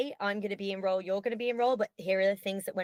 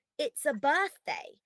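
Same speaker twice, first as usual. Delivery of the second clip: put-on high, insistent children's voices crying out all at once; 6 semitones higher than usual. Retelling a party where the children shout at the speaker: imitating kids screaming. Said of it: "they are screaming".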